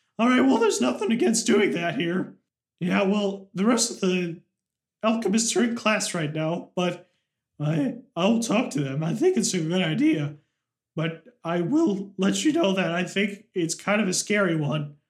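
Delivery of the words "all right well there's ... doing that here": put-on squeaky teenage voice. Voicing a teen at the alchemist guild answering a player: squeaky teen voice. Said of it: "the squeaky voiced teen".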